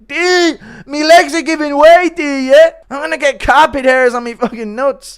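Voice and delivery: very high-pitched, shrill, very loud screaming. Down on the closet floor, calling D for help, screaming Conor McGregor impression. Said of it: "Impression of Connor ... reluctantly screaming for D to come and help".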